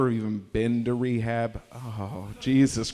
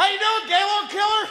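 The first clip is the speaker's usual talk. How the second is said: shrill, high-pitched scream; 4 dB louder than usual. Retelling a man at Ashland and Division screaming at everybody: imitating a man screaming. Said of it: "he was screaming".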